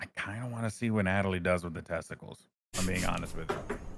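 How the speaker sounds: hushed whispered aside. Player whispering an aside to Jim while another waits for a turn; whispering. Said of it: "I'm gonna whisper back to Jim".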